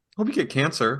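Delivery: play-acted, dead calm, emotionless delivery. Describing people who make threats very calmly, mock calm, no emotion. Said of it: "no emotion whatsoever".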